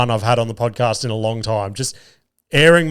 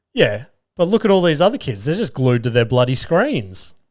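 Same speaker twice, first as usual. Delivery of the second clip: acted, very smug, know-it-all kid voice; 2 semitones higher than usual. A dad retells his kid's reply to being told off: imitating a smug kid. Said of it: "ever so smugly just says to me with the straightest face".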